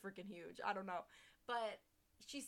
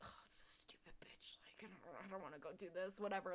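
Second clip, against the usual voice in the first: put-on grumbling mutter under the breath, quieter; 5 dB quieter than usual. Retelling how he reacted when asked to relight the water heater, muttering under his breath. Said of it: "he's talking shit about her under his breath".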